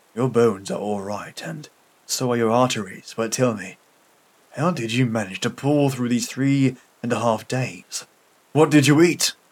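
ordinary delivery

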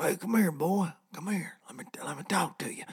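creepy, sleazy uncle voice. Comparing ethanol to a creepy uncle at a barbecue: creepy uncle voice. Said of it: "like that creepy uncle at the barbecue".

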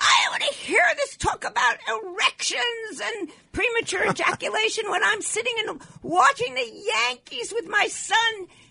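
shrill, very high, screeching voice. Radio host retells a woman who called the station complaining: retelling a screeching complaint. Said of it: "complaining and screeching".

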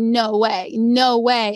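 crying, very slow, tearful, disbelieving delivery. Retelling winning a shopping spree and dropping to the knees, retelling own crying. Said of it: "And I am crying because I'm like".

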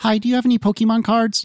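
put-on little, teeny tiny voice, pitched high. Recalling daily store phone calls asking about Pokemon cards: imitating a teeny tiny voice. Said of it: "this little teeny tiny voice".

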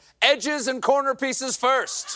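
high, bold, heroic captain-like tone. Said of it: "the captain of the Titanic bravely declared".

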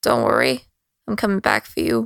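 low, confiding, kept-close aside. Handing over her weapons, she speaks to two companions, speaking quietly. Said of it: "like quietly to um to Cal and Morn".

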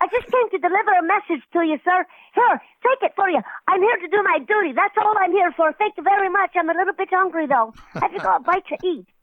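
tiny, small, high-pitched voice. Recalling a line said as Biddy McLeod delivering a message, doing Biddy McLeod's little voice. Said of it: "he had a little voice like this".

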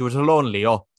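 put-on failed Southern accent sounding Scottish Irish. Showing how the Southern accent turns into Irish Scottish: Carolee's Southern accent gone Scottish Irish. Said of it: "It just becomes Scottish Irish".

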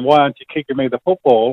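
normal talking voice

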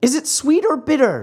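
very high, whiny voice. The marionette, handed a glass to drink, asks in a whining voice. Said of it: "asked in a whining voice".

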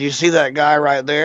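usual speaking voice

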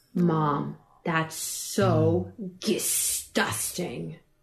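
very drawn-out, slow, emphatic, utterly convinced, acted. Retelling how her kid Edie says something is disgusting, imitating Edie saying it with conviction. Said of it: "such conviction".

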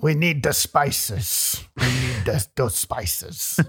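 put-on breathy Dutch accent pushed through clenched teeth. Discussing the spice trade, imitating how the Dutch talk: Dutch accent impression. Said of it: "That's how they talk. That's my best".

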